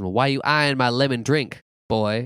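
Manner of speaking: put-on Southern woman voice. Retelling a movie scene, quoting the woman who took him in: imitating a southern woman. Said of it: "she is like a southern woman".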